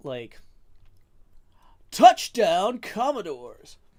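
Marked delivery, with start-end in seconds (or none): 1.9-3.8 very loud, high sports announcer delivery. Trying a line after a viewer suggests a sports announcer: sports announcer voice. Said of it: "sports announcer voice".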